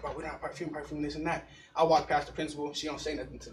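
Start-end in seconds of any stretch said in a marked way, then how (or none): 0.0-1.5 mock flustered, panicked, frantic babble in a tizzy. Retelling friends behind them walking inside: imitating panicking friends. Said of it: "Everybody behind me is panicking. They're like".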